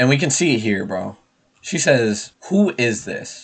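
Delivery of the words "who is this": acted, menacing, threatening, pointed delivery. Reading out her text message to a friend, mock-menacing tone. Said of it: "In a menacing tone".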